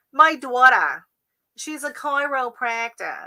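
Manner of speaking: put-on thick, laid-on Boston accent, spoken slowly. Imitating a Boston friend or aunt bragging about a daughter, in a thick Revere Boston accent. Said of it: "that's a super Revere accent".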